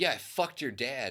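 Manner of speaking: put-on loud shout. Retelling a comeback yelled at a wedding party: imitating a loud retort. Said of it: "said it so loud that everybody heard it".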